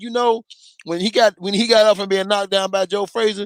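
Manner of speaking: ordinary talk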